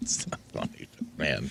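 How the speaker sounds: half-whispered through laughter, breathy. Answering a story about a funeral while laughing while talking. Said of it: "Then why are you laughing".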